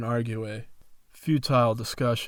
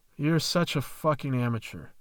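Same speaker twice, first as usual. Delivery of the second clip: ordinary delivery, nothing marked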